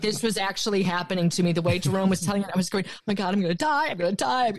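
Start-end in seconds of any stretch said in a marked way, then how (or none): 2.9-4.5 put-on terrified, frantic, panicked voice. Retelling own reaction to a tense story told by Jerome: retelling own past panic. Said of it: "very real panic for me".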